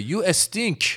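thick Persian accent. Joking about Farsi insults, then switching to a thick Persian accent. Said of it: "That's saying you stink with a thick Persian accent".

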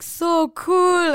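put-on Israeli accent on English words. Retelling what girls said as they were walking past, with an Israeli accent. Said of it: "with an Israeli accent".

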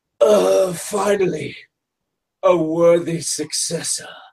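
echoey, spectral voice. Retelling what came over the ref's microphone in the arena, in an echoey, ghostly voice. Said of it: "this kind of echoey, ghosty voice".

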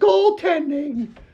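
very high-pitched scream. Recounting a game, speaker mimics Steve calling goaltending: imitating Steve's high-pitched scream. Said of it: "in a very high-pitched voice".

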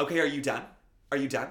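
very loud, high, frantic shouting. Retelling how a comic yelled at a heckler: imitating someone yelling. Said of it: "she just kept yelling".

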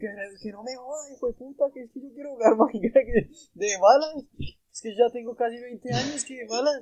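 high-pitched whiny voice. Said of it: "yo le dije".

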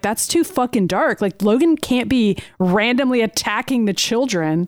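plain

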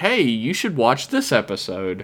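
usual speaking voice

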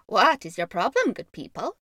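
raspy, loud, swooping bird-like magpie chitter. Reading a tale, the magpie man addresses the crowd around him in a raspy chittering magpie voice. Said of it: "asked the magpie man in his magpie voice".

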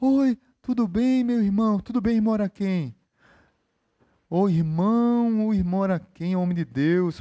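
saintly, pious, holy-sounding devout voice. Mocking a believer who talks to people this way, the speaker imitates a pious churchgoer's voice. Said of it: "A voz dele é assim".

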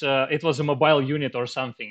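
plain

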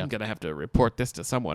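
ordinary delivery

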